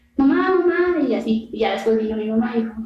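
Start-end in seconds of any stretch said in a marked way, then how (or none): 0.2-1.1 put-on scared, desperate, high, frightened child's shouting. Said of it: "estaba como gritando".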